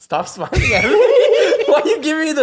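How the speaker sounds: high, loud laughing voice.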